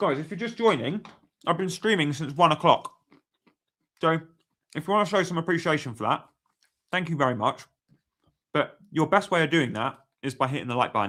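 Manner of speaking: speaking through a mouthful. Streamer thanks viewers and asks them to hit like: talking with mouth full. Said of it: "I can't believe I'm saying this with a mouthful".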